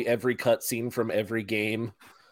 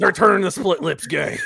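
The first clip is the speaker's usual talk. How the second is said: rough, raised, bellowing voice; 8 semitones higher, 6 dB louder than usual. Showing how a character's lines would be good that way, do an Alex Jones impression. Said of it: "would be really good with an Alex Jones".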